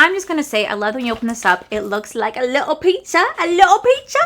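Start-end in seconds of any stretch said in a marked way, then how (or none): 1.7-4.2 bad Italian accent, high and swooping. Opening a pizza palette and voicing the pizza: bad italian accent. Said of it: "I was trying to do like an Italian voice".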